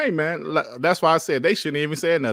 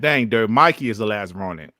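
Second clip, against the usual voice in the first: ordinary delivery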